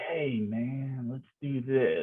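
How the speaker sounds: soft, slow, seedy, sleazy strip-club guy voice. Recreating the voice chosen for a character in an episode: seedy guy voice. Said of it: "a seedy guy in like a".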